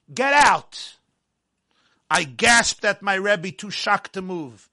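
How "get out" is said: furious, loud, high-pitched yelling. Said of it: "he glared at me with red-hot fury".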